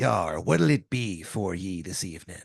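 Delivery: put-on classic low, slow old sailor accent. Describing older union fishermen, imitating their classic sailor accent. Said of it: "classic, like, sailor accent".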